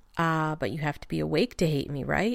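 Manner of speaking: ordinary delivery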